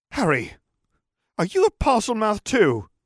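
very high, shaken, indignant and outraged outburst. A student speaks up to the whole room as others leave; shaken yet outraged voice. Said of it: "he said in a shaken yet oddly outraged voice".

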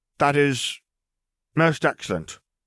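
commanding, authoritative tone. [name] answers Wizard Lennon in her most authoritative tone. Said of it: "in her most authoritative tone".

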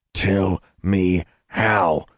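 growled through clenched teeth. Narrator voicing a man pressing Alexandra, who won't change her mind, growled through clenched teeth. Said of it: "he growled through clenched teeth".

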